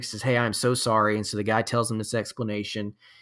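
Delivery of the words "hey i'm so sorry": ordinary talk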